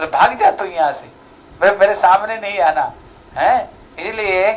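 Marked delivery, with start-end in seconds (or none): none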